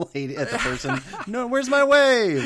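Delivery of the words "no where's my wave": very high, loud, slow, drawn-out shriek. Speaker recalls a favorite sitcom moment, imitating Jerry Seinfeld screaming out the car window. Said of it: "sticks his head out the window and screams".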